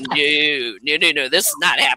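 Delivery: play-acted, firm, flat-out refusal, each no stretched. Retelling refusing someone who keeps chasing: imitating own firm refusal. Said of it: "I'm not having any of this".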